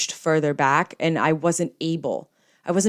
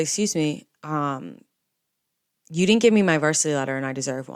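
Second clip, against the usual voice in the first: mock slightly trembling, hesitant, nervous voice. Retelling confronting the man handing out varsity letters, imitating a shaky voice. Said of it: "my voice was a little shaky".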